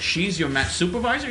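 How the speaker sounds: ordinary talk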